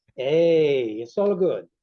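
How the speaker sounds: Italian-American New Jersey accent. Asked to try an Italian accent on the other speaker: Italian-American Jersey accent. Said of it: "Would you like to try your Italian accent on me?".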